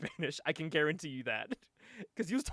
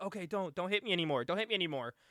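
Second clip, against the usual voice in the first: pleading, begging, quieter; 5 dB quieter than usual. Retelling a wrestler on his knees begging his opponent: imitating someone begging. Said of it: "he's begging Shocker".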